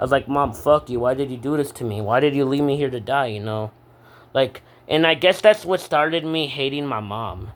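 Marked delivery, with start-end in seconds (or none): 0.3-3.3 mock angry outburst. Retelling what they said to their mom, retelling angry words. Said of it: "I was so mad at my mom".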